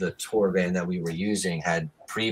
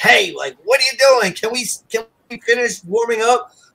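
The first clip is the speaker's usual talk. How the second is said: put-on aggressive voice, much higher and louder; 10 dB louder than usual. Retelling how Chris opened the door during vocal warm-ups; imitating Chris, mock-aggressive. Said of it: "opened the door all aggressively to be like".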